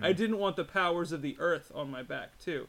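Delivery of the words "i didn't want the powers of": ordinary delivery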